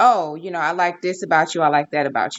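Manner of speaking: ordinary talk, nothing marked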